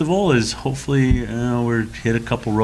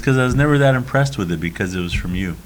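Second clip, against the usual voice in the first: ordinary delivery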